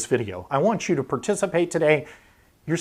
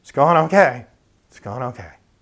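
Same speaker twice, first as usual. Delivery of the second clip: down and dejected, glum, downcast voice; 2 semitones lower, 7 dB louder than usual. Showing how someone answers a greeting on the way into the gym, down and dejected. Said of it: "your voice sounds kind of down and dejected".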